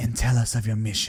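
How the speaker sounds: harsh, demonic female voice. Narrating a scene where a voice addresses the guest, in a harsh voice. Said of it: "A harsh voice breaks through".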